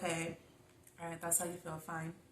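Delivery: calm, easygoing, soft and quick. Describing how they sometimes answer him, the speaker acts out their past self: retelling a calm reply. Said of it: "sometimes I'm calm and I'm like".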